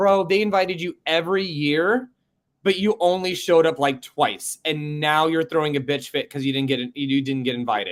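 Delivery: plain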